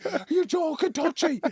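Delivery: mock very high, loud, unhinged frantic yell. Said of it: "impressions of me going nuts".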